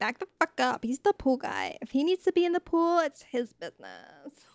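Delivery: put-on swooping, sing-song, laid-on Valley Girl accent. Act out Paris standing up for the pool guy, in Paris's Valley Girl accent. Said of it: "keeping Paris's Valley Girl accent".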